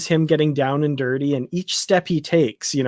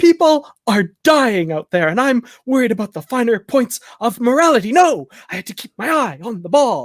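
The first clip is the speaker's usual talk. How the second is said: impassioned speech with voice raised high; 8 semitones higher than usual. Imitating the captain's delivery when he gets impassioned: impassioned Sisko impression. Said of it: "when he gets impassioned".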